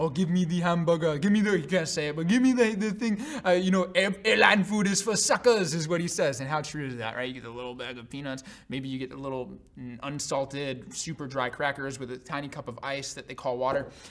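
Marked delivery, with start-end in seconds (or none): 0.0-5.7 put-on French accent. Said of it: "with less of a French accent".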